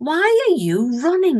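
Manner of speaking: soft Northern English woman's voice. Narrating a story, the speaker voices a bear looming over him in a gentle female voice. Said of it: "it said in a gentle female voice".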